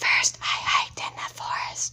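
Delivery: whispered, under the breath. Checking a sentence by reading it aloud: whisper reading. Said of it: "I'm gonna whisper read it".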